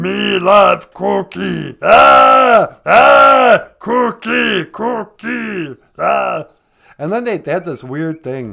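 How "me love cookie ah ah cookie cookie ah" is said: booming voice, slow and rough. Doing an impression of Cookie Monster, Cookie Monster voice. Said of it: "here's my impression of Cookie Monster".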